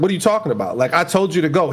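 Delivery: ordinary delivery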